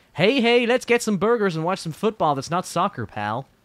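very friendly, put-on American accent. Saying the line himself because she is shy: friendly American accent. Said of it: "I do a very friendly American accent".

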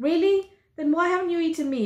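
playful, impish tone. Madeline retorts to the Yark, mischievous tone. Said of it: "Madeline retorts in a mischievous tone".

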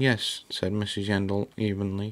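ordinary delivery

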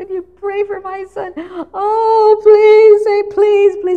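very high-pitched, crying, tearful begging. Imitating people asking for prayer: imitating tearful begging. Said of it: "they're begging and crying and begging".

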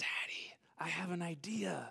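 put-on soft, unvoiced little-girl whisper.

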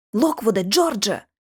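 whispering. Narrator calls to the two boys on returning to the hallway, whispered. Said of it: "прошепотіла я".

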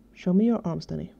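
plain

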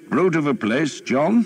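very high, cheerful voice. In a story, an earl remarks on the city walls to the archers' leader, cheerfully. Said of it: "the Earl said cheerfully".

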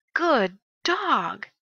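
loud, strongly felt, intense delivery. Showing readers how to read a line of a story aloud, with strong feeling. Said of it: "we read it with strong feeling".

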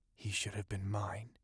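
muttered in anger. After peering through the smoke, a woman clenches her hands and speaks, muttered in anger. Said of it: "she muttered".

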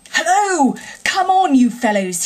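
hearty, jolly voice. Catching sight of his friends arriving, a man calls out to them: cheerful cry. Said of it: "he cried cheerfully".

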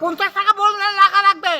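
angry farmer voice.

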